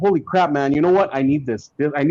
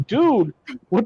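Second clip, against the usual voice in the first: ordinary talk, nothing marked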